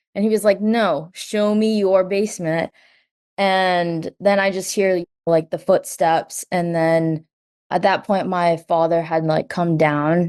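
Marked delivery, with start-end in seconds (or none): 0.6-2.7 firm, no-nonsense, angry, very stern voice. Retelling a man's exchange with a woman, overheard by the speaker, retelling an angry, stern demand. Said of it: "being angry and very stern".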